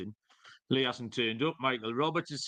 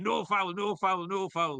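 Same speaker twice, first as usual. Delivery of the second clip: acted, high, drawn-out, repeated cry; 6 semitones higher than usual. Retelling his own reaction while watching a match, retelling a scream. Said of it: "and I'm just screaming".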